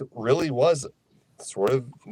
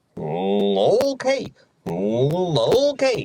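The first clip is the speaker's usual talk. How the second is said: slow, swooping, sing-song judging cartoon voice, each "oh" stretched. Speaker describes a cartoon character's reactions, doing Goofy voice with put-on judgment. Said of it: "a hint of judgment sometimes in Goofy's voice where he goes".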